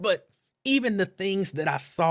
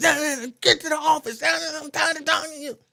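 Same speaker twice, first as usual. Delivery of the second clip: mock very high, dismissive, scolding yell; 14 semitones higher than usual. Retelling how a teacher speaks to a child: imitating someone yelling at a child. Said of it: "he getting yelled at and sent to the office".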